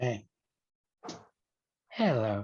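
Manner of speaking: warm, loving, affectionate tone. Greeting someone as if they were a beloved best friend, on request: warm greeting to a best friend. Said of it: "say it to me like I am your best friend".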